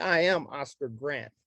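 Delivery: ordinary talk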